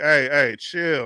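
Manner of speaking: let-down, disappointed murmur, half to oneself, under the breath. Telling a story about old man Mo, imitating Mo's disappointed mutter under his breath. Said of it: "Mo under his breath, disappointed".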